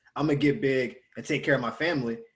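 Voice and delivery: ordinary talk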